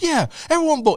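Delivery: very high, rowdy rallying yell. Retelling a passenger rallying a plane to vote someone off: imitating a man yelling. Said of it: "He's, like, yelling".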